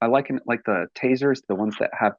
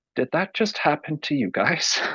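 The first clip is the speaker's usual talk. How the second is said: muttering from the side of the mouth, higher; 4 semitones higher than usual. Retelling a question asked to two friends: retelling a side-of-mouth mutter. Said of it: "out of the side of my mouth".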